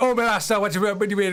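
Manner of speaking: put-on full-on thick Jamaican accent, laid on hard. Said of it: "he did it hardcore".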